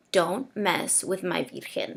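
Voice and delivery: very, very stern motherly voice. Speaker recalls what their mother said on seeing an image, imitating a very stern voice. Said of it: "in a very, very stern voice".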